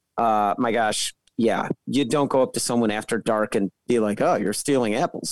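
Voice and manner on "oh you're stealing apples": put-on threatening voice, full of menace. Acting out going up to someone after dark: imitating a threatening tone. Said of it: "being all threatening".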